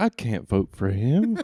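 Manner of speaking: slow, deliberate cartoon dad voice. Recounting a cartoon episode about a soft handshake, doing a Hank Hill voice. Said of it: "that was a really good Hank Hill".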